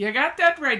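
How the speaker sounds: put-on loud, hollered regional accent with dropped H's. Jed talking to his friend Lester about visiting siblings, Jed's regional accent. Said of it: "you drop your H's. Uh, T H is usually a D sound".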